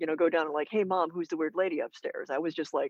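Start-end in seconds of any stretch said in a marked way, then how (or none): none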